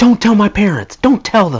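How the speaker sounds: mock frantic ranting, very high-pitched. Retelling what they said, concussed, to the guy who picked them up, retelling a rant. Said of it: "apparently I was ranting to him".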